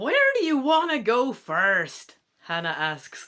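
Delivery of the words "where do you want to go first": very loud, high, horrible put-on American accent. Telling a search-for-Champ story, voicing Hannah in a horrible American accent. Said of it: "I'm also going to give Hannah a horrible American accent again".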